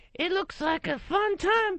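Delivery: very high little ventriloquist dummy voice. Trying the ventriloquist act again after being asked: ventriloquist puppet voice. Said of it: "I'll try and make it different".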